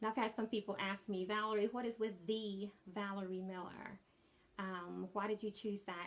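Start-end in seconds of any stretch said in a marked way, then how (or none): none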